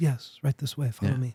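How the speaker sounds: serene, soft, calm, gentle and polite. Retelling how the sensei answered the door: imitating a calm, gentle voice. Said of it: "He was so calm and gentle".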